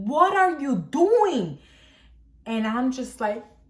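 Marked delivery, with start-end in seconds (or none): 0.0-1.6 put-on, slow, drawn-out, high-pitched scolding scream. Retelling how the grandfather reacted to a fall: imitating someone screaming. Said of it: "he was screaming at me".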